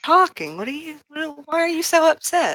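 high, sickly sweet voice. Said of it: "using her sickly sweet voice".

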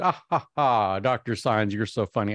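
put-on chuckling, amused and laughing through words. Retelling a teacher's laughing reply to a joke: imitating a teacher laughing. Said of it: "And then she laughed".

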